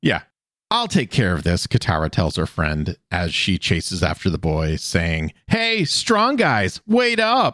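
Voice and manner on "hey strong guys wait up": very high, swooping, drawn-out heavy sarcasm. Recapping an episode, speaker voices Katara chasing after the boy, imitating Katara's sarcastic tone. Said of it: "in probably one of the most sarcastic tones I have heard yet".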